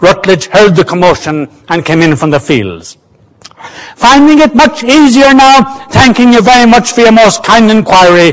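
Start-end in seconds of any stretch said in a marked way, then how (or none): 4.0-8.3 pitched-up, mocking called-out words. A man, just in from the fields, calls out mockingly. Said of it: "he called out mockingly".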